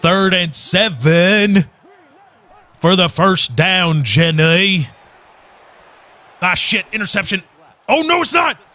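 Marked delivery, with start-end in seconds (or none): 0.0-4.9 very slow delivery with the word seven drawn out. Imitating how the commentator Jim Nantz just said the line: Forrest Gump voice. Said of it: "Why did he say it like Forrest Gump?".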